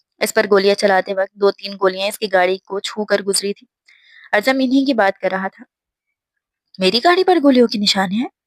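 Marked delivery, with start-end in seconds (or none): 6.8-8.3 feigned full surprise. Reading a story where a suspect pretends surprise: feigning full surprise. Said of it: "بھرپور حیرانی کی اداکاری کرتے".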